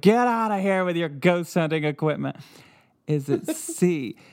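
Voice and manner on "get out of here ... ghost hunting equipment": put-on grouchy, cranky ghost voice. Joking about what a ghost recording might say: put-on cranky ghost voice. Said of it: "Some cranky ghost that's like".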